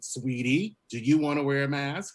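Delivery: mock patronizing, sugar-coated, talking-down tone. Retelling a flight attendant leaning down to a teenager: imitating a condescending tone. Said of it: "he was being condescending".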